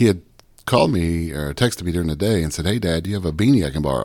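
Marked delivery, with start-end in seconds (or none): none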